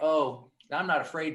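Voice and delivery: ordinary talk, nothing marked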